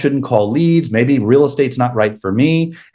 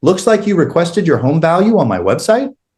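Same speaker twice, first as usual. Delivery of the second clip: question-like upspeak rise on "website"; 4 semitones higher than usual. Showing how a rising end turns a statement into a question: rising pitch on website. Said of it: "I went up in pitch. So they're hearing a question mark, even though it was a statement".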